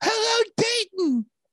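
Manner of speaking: shrill, very high, belted, acted-out call. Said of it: "he yells".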